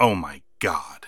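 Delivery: soft, low, grave, stunned dead-serious murmur. Recapping a man mocking another's lisp, imitating Tony Schiavone dead serious. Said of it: "dead serious".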